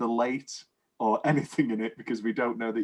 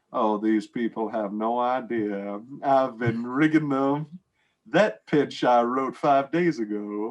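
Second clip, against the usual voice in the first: put-on sly Southern accent, said as an aside; 4 dB louder than usual. Retelling a scene where a character turns to the camera, in a southern accent. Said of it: "with a southern accent and goes".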